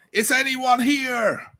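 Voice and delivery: very high yell, called out loudly. Exploring a smoky second-floor corridor, the speaker yells out; yelling out. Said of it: "I yell out".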